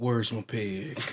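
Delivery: put-on odd Southern accent. Joking about a movie, in a weird Southern Nicolas Cage accent. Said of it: "with that weird Southern accent".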